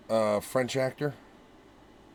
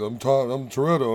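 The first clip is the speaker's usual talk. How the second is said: ordinary delivery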